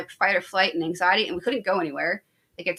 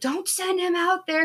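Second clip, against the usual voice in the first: put-on screaming, much higher pitch; 11 semitones higher than usual. Woman recounting screaming as her husband hands over a fire extinguisher, retelling a scream. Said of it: "I'm screaming".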